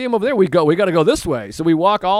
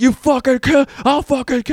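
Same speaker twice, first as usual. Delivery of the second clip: put-on man's scream, higher pitched; 6 semitones higher than usual. Retelling what a stranger on the street was yelling: imitating a man screaming. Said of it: "He's screaming at two young women".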